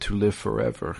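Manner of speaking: mock solemn, grave, deadly earnest delivery. Retelling a movie scene where a man answers his torturer, retelling a very serious line. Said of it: "very seriously says".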